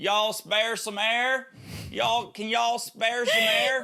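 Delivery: put-on Tennessee accent at a very high pitch. Mocking someone who does bad impressions, doing John's Tennessee accent. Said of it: "That's John's Tennessee accent".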